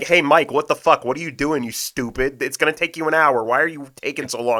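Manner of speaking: put-on scolding yell. Speaker acts out how someone should scold them for delays, imitating someone yelling. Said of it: "someone needs to yell at me and be like".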